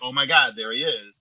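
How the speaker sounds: ordinary talk, nothing marked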